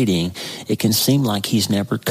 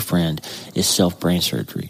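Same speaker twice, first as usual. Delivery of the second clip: normal talking voice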